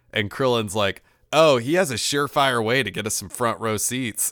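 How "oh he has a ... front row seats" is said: plain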